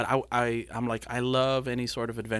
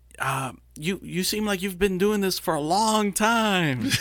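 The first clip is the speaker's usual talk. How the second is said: mock loud, raised yelling; 8 semitones higher, 5 dB louder than usual. Retelling what the pilot said over the mic while landing: imitating someone yelling. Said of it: "yelling into his, his little mic".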